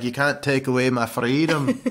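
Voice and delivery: put-on Scottish accent. Retelling what a man said to them, in a Mel Gibson Braveheart voice. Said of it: "he was all Mel Gibson Blueface".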